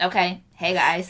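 flat monotone voice. Upset at being asked to change their normal voice, demonstrating a flat monotone voice. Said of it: "so you guys just want me to be monotone?".

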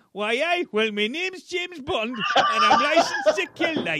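Geordie accent, pitched slightly up. Imagining a Geordie James Bond, speaking in a Geordie accent. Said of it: "a Geordie Bond ... Imagine that. / I love the Geordie accent".

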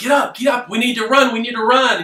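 very high, shrill, repeated shouting. Telling a story where she keeps yelling at you in the woods, retelling a yell. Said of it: "keeps yelling at you".

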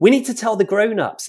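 shrill high-pitched yell. As lurkers race toward someone frozen in fear, he yells: yelling. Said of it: "Ash yelled".

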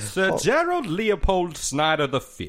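very high, swooping, slow, stretched-out drawl. Saying a made-up gentleman's name: sounded like Foghorn Leghorn. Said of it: "that sounded like, uh, the Foghorn Leghorn a little bit".

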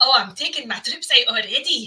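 clumsy, bad, put-on Scottish accent. Speaker mocks the King of Scotland's portrayal, doing a bad Scottish accent. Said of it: "that kind of Scottish accent".

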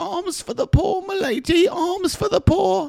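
very high-pitched, put-on British accent. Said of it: "you're welcome for that British accent".

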